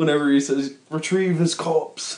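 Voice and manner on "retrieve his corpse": put-on mixed English-American accent. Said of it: "that's one of my favorite parts about the Broken Matt Hardy. It's a mix between, like, an English accent and, uh, a American".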